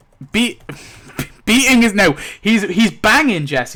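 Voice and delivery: too excited, high, loud, giggling, blurted out.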